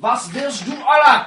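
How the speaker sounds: high, loud, barked mock orc voice speaking German.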